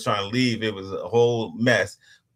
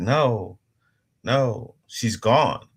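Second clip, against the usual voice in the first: very slow, dragged-out, drawn-out words. Retelling a phone call, the speaker quotes the woman who called in a really soft voice. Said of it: "really soft voice".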